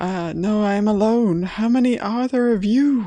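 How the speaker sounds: worried, uneasy tone. A game master voices a stranger answering Ulfgar's question; concerned tone. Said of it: "a definite tone of concern in their voice".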